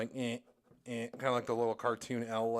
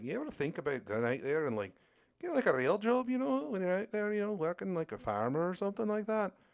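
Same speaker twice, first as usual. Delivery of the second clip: put-on lively Scottish accent, pitched up with swooping intonation; 8 semitones higher than usual. Retelling an interview question, imitating Mark Millar with a Scottish accent. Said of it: "The Scottish accent from Mark Millar".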